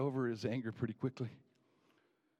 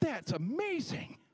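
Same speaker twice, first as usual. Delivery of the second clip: put-on very high, slow, amazed teen voice. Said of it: "And I'm like".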